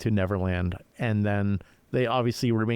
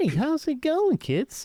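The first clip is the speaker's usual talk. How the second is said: put-on very high-pitched, bright children's TV presenter voice. Showing how to greet two kids in a bedroom, in a higher-pitched kid-show host voice. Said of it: "higher pitched voice".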